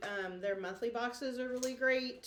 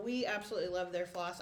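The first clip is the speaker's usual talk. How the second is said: ordinary talk, nothing marked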